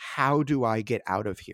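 acted terrified, earnest pleading tone. Retelling what a woman said while grabbing the speaker by the shirt: imitating a terrified, earnest plea. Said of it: "in a terrified voice, but yet a very earnest one".

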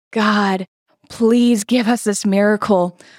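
put-on tearful, crying voice. Retelling praying to god for a miracle, retelling a crying prayer. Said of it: "I am crying like".

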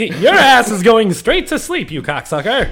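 put-on old-time 1920s Irish brawler voice. Trash-talking an opponent in a comedy bit, 1920s brawler voice. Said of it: "The brawlers from the 20s".

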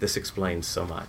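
mock hushed, very quiet, level deadpan. Retelling Jackie's response to a picture, imitating Jackie's deadpan. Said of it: "her simple deadpan response was".

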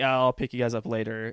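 usual speaking voice

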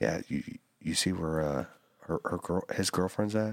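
hushed, quiet stage half-whisper, said aside. Retelling what an aunt said at a family gathering: imitating aunt half-whispering. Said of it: "whispering to me".

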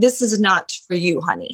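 put-on Italian Iranian accent, dismissive tone. Retelling what people who doubted the speaker said, in an Italian Iranian accent. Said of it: "now they had an Italian Iranian accent".

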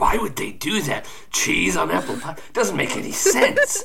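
fed-up, animated grumbling with swooping pitch. Voicing a character sitting there, grumbling. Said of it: "He's just sitting there grumbling".

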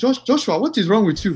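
imitated Nigerian accent. Quoting the speaker's mom as the speaker came inside, in a Nigerian accent. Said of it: "Nigerian accent".

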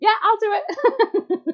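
high, slow, keen, eager yes.

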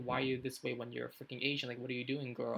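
ordinary talk

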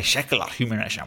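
put-on Scottish accent. Imitating how the other speaker says a phrase: Sean Connery impression. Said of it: "like Sean Connery".

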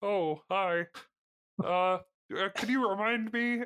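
slow, halting put-on voice, tripping over uhs. Doing a character's line, the voice sliding toward Ray Romano. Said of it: "My Ray Romano is creeping into Kermit".

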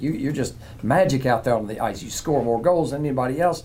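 ordinary talk

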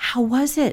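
put-on whisper. In bed, the speaker retells whispering to him so the other boys won't wake: retelling a whisper. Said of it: "I whispered".

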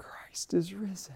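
awed, hushed whisper full of wonder. Speaker picturing a woman standing alone at morning, acting out an awed whisper. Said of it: "standing there whispering".

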